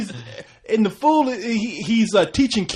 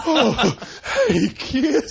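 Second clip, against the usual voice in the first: higher mock panting, out of breath; 5 semitones higher than usual. Imitating a costumed figure who sounded like he ran five miles: imitating someone out of breath. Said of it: "He sounded like he just ran a, like, five miles to do it".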